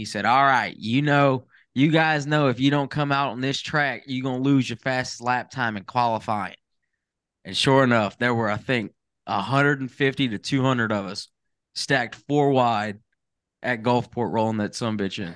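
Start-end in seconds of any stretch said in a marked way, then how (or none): 0.2-6.5 put-on heavy Mississippi accent, laid on thick. Retelling an intercom announcement before qualifying, Ronald's thick Mississippi accent. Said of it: "in his thick Mississippi accent".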